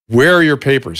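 subdued, held-back yell. Retelling how a security guard at the hospital shouted: imitating a guard screaming.

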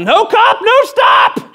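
very high, very slow, stretched-out yell. Retelling yelling out of a car full of guys: retelling own past yell. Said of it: "And I yelled out".

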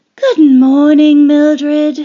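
tired, worn-out, weary voice, level tone. Headmistress greets a pupil sent to her office, speaking wearily. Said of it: "she said wearily".

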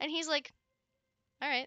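ordinary talk

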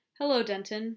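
ordinary delivery

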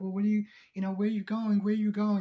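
put-on yelling. Retelling how she reacted when Daniel needed space, retelling a yell. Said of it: "she's like yelling".

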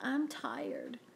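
soft, hushed, indistinct mumbled words. Woken early by Mike, Frankie answers without opening his eyes, mumbled. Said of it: "Frankie mumbled".

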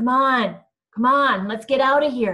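loud, shaky, trembling, begging voice. Narrator reads Arthur's line as Eric shoots out a headlight, trembling, pleading voice. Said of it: "Arthur's voice was trembling and pleading".

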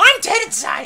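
very high, very loud toad character voice. Commenting on toads on screen, the speaker voices one in a toad voice. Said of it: "what's a good toad voice?".

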